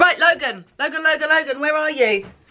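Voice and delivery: high, carrying call, calling out.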